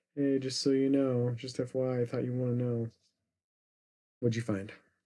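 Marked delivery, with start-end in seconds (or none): 0.2-2.9 put-on nonchalant delivery, quieter. Retelling a character calling over the intercom: imitating a nonchalant announcement. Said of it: "Very nonchalant".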